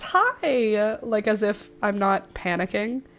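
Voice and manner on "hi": cheery put-on phone voice, bright on 'hi'. Showing what their phone voice sounds like, bright phone voice on 'hi'. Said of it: "My phone voice".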